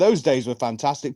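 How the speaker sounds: ordinary talk, nothing marked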